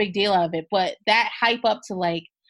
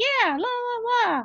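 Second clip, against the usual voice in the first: put-on very high baby-talk voice, "love" stretched; 13 semitones higher than usual. Acting out how Cole sounds one moment before he turns, do Cole's baby voice. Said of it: "With his baby voice or whatever".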